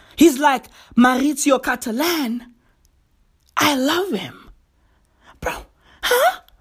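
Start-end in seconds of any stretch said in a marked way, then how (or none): 1.0-4.5 put-on choppy speech with words missing. Mocking how an artist speaks, words left out of sentences: imitating David Datuna's broken speech. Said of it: "That's how he speaks".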